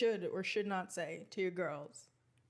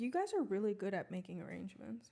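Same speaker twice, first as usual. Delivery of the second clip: ordinary talk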